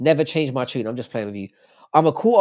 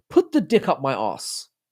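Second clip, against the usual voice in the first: posh-sounding, classy English accent. Showing that a line sounds classy in an English accent. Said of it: "it sounds classy in an English accent".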